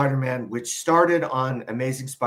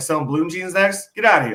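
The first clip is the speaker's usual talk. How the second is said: put-on mocking taunts, higher and louder; 5 semitones higher, 5 dB louder than usual. Retelling how friends used to taunt a sellout: imitating old sellout taunts. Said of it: "we used to talk like that".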